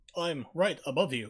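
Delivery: mock overdramatic acting delivery. Repeating a game character's line mockingly: William Shatner-style acting. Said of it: "School of William Shatner Acting of Voices".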